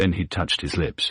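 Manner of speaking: usual speaking voice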